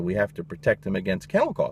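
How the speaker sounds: ordinary talk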